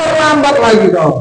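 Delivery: high, harsh, put-on sharp scolding. Acting out someone glaring and pointing while rebuking, mock high-pitched scolding. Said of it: "dengan nada suara tinggi, bahasa tubuhnya agak apa dibesarkannya, melotot dan jari-jari menunjuk sambil menghardi ya".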